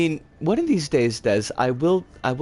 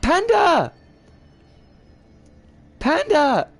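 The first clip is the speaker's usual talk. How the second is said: high, cracking voice breaking very high; 12 semitones higher, 4 dB louder than usual. Greeting a viewer named panda, voice cracking. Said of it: "My voice cracked".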